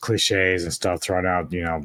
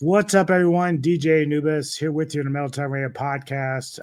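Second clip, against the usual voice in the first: hoarse, croaky, very high, mostly gone voice; 9 semitones higher than usual. Opening a podcast while sick with a cold: hoarse voice from a cold. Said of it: "my voice is kinda gone".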